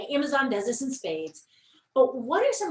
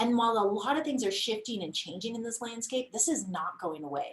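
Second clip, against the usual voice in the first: plain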